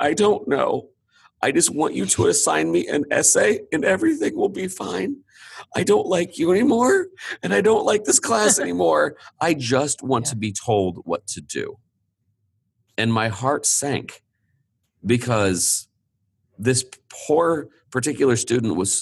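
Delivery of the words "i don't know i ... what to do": put-on pitched-up voice, fighting not to cry. Retelling a student who came to them mid-semester, imitating her holding back tears. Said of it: "And she was trying not to cry".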